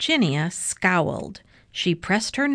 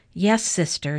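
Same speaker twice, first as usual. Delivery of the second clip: plain reading voice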